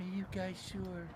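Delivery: mock meek, soft, timid little voice. Imitating a voice heard on a recording: imitating a timid voice. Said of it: "That's a very timid voice".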